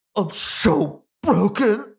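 imitated fake crying. Imitating a show contestant's crying that doesn't look real: imitating fake crying. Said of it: "Just like that".

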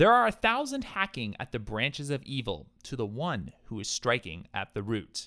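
ordinary delivery

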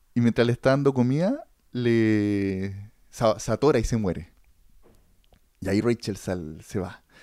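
normal talking voice

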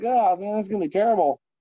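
exaggerated sarcastic complaining tone. Speaker retells a man's reply to him, imitating someone being sarcastic. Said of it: "He said sarcastically".

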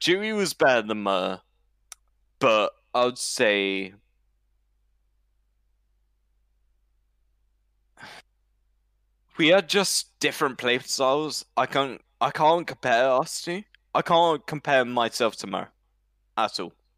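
intoxicated-sounding speech. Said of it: "I'm just really drunk".

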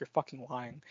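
whispering. Retelling a friend's reaction told mid-movie, re-enacting her whisper. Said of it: "she like whispered".

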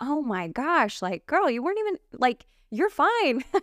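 gentle reassuring, pitched high.

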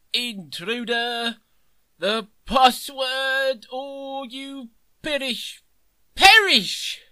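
put-on very high, slow, unsteady drunken blustering voice. Game master voicing a knight by a well who challenges the intruders, drunk knight Gumboil. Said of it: "and there's a knight sitting on the well drinking out of a bottle. He's getting up now. He doesn't look very steady".

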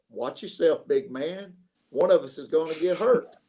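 put-on very compassionate, kindly, caring tone. Speaker retells what a man said to him, imitating a compassionate voice. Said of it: "in a very compassionate voice says".

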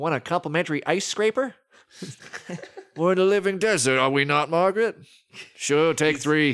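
put-on Midwestern accent. Playing a Midwestern character in an improvised bit, Bill Macy Midwestern accent. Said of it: "he's still going to be Midwestern".

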